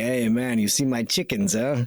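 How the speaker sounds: put-on New York, Manhattan accent. Imagining a lower Manhattan prepper group talking, in a New York accent. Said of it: "they all sound like they got the accent".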